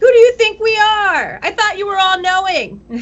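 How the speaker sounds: very high, shrill, belligerent yelling. Playing a character who starts yelling at him: character yelling. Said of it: "she would totally start yelling at him".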